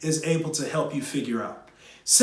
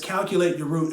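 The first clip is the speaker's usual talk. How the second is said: plain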